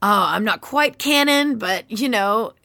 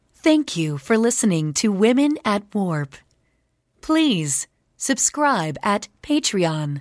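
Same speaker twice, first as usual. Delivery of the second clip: announcing onboard computer voice. Guest who voiced the computer in a trailer does it for the podcast, computer voice. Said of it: "we're going to need that sample of the computer voice".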